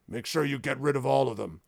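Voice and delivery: gruff voice with a rough edge. Recapping the last session, voicing an order heard through doors: gruff Merrick voice. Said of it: "the gruff voice of what sounds like Merrick saying".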